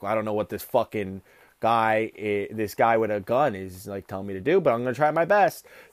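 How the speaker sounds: acted, low, fed-up, put-upon, exasperated grumble. Retelling a guy told what to do by a man with a gun, imitating exasperated eye-rolling. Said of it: "he's like rolling his eyes like".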